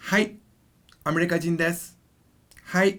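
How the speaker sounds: put-on cute girl voice. Showing learners how to answer a question in Japanese: cute girl voice. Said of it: "I'm saying it like a cute girl voice".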